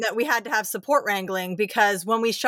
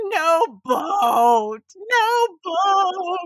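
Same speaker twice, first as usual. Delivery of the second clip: put-on screaming child voice, higher; 9 semitones higher, 4 dB louder than usual. Retelling a child's meltdown in a boat: imitating a screaming child. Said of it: "your daughter is screaming".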